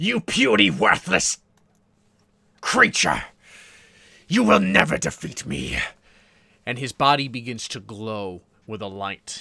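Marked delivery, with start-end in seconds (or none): 0.0-5.8 very loud, ragged, shrill villain scream. Voicing a dying villain as the hero carves out his stone: screaming villain voice. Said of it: "as he screams out".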